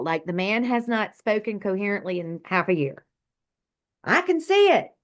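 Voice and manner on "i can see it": mock shout, very high-pitched. Speaker recalls a father who suddenly reached up and spoke; retelling Dad shouting. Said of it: "he starts shouting".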